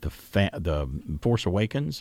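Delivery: plain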